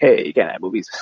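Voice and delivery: plain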